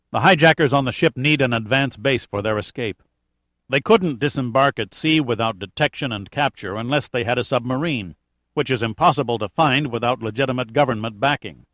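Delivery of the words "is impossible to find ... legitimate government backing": plain reading voice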